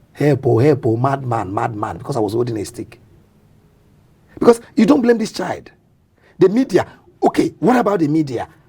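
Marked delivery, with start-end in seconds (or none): none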